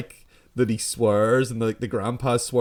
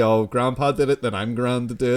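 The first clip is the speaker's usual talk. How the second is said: ordinary delivery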